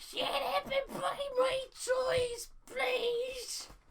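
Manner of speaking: mock tantrum, very high, slow and drawn-out. Reading a quote aloud: Chris Chan throwing a tantrum. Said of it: "Chris throwing a tantrum".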